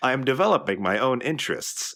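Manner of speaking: acted robotic voice. Joking about a Doom Let's Play, answering as the AI Vega in his robot voice. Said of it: "in his standard robot tone".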